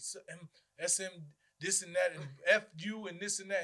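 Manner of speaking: plain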